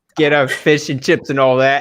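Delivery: put-on mock Australian accent. Joking around in a group, mock Australian accent. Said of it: "Slowly going Australian".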